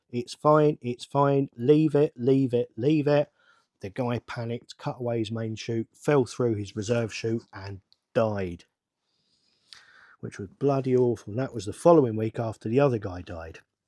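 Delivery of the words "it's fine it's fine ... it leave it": normal talking voice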